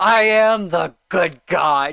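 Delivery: slow, high-pitched and unhinged delivery. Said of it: "sounds so insane".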